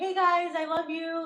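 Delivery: insincere, fake-sweet affection, high and slow. Showing what an insincere greeting from the speaker would sound like: fake affectionate greeting. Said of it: "I'm being fake as fuck".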